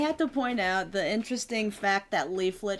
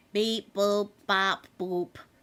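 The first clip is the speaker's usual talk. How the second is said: put-on robotic voice. Joking after being told they turned into a robot: put-on robot voice. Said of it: "You turned into a robot".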